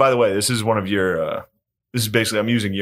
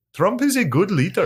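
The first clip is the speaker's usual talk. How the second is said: put-on Indian accent in a very high voice; 11 semitones higher than usual. Working out a character in his head, speaker uses an imitated indian accent. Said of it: "then you can go from there ... There you go. That's pretty good".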